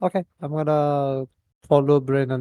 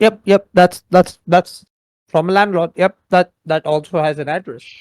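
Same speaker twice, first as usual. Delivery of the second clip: very loud, frantic, furious continuous talk; 4 semitones higher, 8 dB louder than usual. Voicing a character reading a landlord letter: furiously noting aloud. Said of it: "furiously note".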